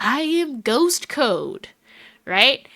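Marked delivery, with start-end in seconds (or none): 0.0-1.7 very slow, drawn-out half-whisper. Game master voicing a half-whisper in a player's ear: Ghost Code's half-whisper. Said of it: "a whisper that whispers in your ear".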